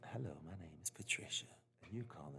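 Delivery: put-on sultry phone voice. Playing Patricia answering a phone: Patricia as a sex chat line. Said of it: "That's a sex chat".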